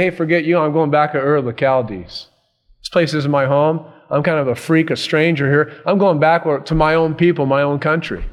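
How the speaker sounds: usual speaking voice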